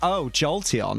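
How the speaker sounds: put-on tone of plain distaste, grossed-out. Speaker reenacting how they just reacted to Jolteon, mock-disgusted. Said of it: "Like I was disgusted".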